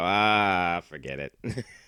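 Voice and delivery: put-on dismissive, shrugging-off tone, drawn-out "ah". Retelling how the daughter gives up explaining: imitating daughter giving up. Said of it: "she just looks into the corner and go".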